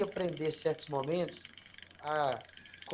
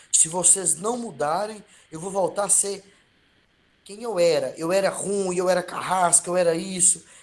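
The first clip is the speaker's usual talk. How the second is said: put-on, loud, menacing, intimidating tone; 2 semitones higher, 3 dB louder than usual. Retelling the supervisor threatening the team: imitating a loud intimidating tone. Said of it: "com um tom de voz bem alto".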